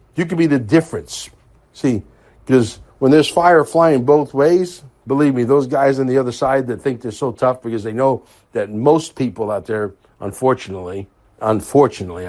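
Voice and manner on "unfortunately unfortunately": "unfortunately" repeated, leaned on hard. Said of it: "I stress the word unfortunately".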